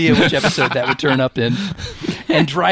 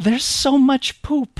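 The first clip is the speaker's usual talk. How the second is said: put-on very high, mournful, plaintive, sad voice; 10 semitones higher than usual. Recapping a podcast episode, retelling her line in a mock-plaintive, sad voice. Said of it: "she just says in this sort of plaintive, sad voice".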